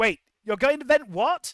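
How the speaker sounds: very loud, high-pitched yelling. A character yells into the box after firing his pistols: yelling into the box. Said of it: "he yells into the box".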